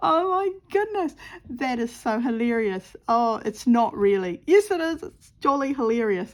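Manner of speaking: loud speech with laughter breaking through words. Laughing at own mistake after losing a needle, laughing while talking. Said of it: "I shouldn't be laughing, but I am".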